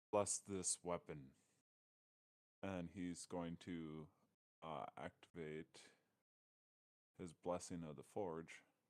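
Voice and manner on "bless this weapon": every word very clear and distinct. Voicing a character blessing a sword: very clear voice. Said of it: "in almost a very clear voice for once".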